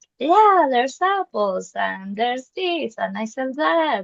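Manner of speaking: put-on vendor shouting. Retelling someone's comparison to a market, imitating market vendors shouting. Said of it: "people shouting like".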